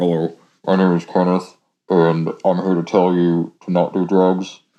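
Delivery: low, flat, mechanical voice-changer robot voice. Showing the disguised voice used on people in drug busts: weird disguised robot voice. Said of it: "weird robot voice thing on him that they put on people in drug busts".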